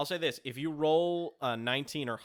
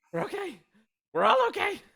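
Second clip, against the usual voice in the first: very high, out of breath, gasping between words; 5 dB louder than usual. Voicing a character after he kills a creature with a dagger: panting while speaking. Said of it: "and then he's just, like, panting".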